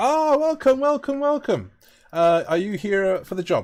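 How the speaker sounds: effusive, very high-pitched, friendly tone. Voicing a brewery host greeting newcomers: very friendly. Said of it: "very friendly guy".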